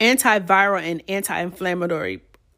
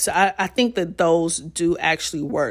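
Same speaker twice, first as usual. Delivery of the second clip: usual speaking voice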